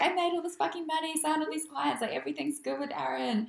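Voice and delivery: elated, boastful, high and excited.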